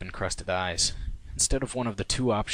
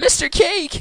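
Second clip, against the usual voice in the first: very high, very loud shriek; 10 dB louder than usual. Attempting a Pinkie Pie voice shouting down the stairs to Cake. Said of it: "I'm gonna try to do a Pinkie Pie voice".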